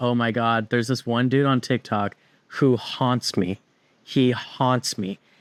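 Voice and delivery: ordinary talk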